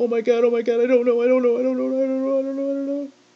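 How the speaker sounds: acted high, fast, repeated, frantic panicked babbling. Retelling what a woman said in the background, imitating frantic panic. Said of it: "but yet frantic in the background".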